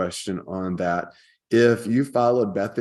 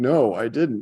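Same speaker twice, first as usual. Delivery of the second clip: put-on near-tearful voice, higher; 3 semitones higher than usual. Retelling a childhood friend's answer to a mom: imitating a friend almost crying. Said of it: "he's almost crying".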